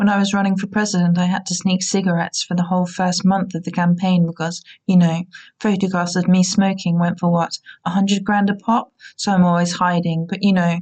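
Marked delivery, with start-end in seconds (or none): none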